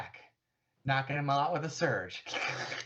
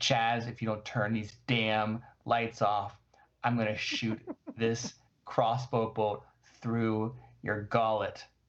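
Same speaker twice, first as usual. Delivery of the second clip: low, menacing, intimidating voice; 4 semitones lower than usual. Retelling raising a crossbow and addressing Chaz, in a put-on intimidating voice. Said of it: "I say in my most intimidating voice".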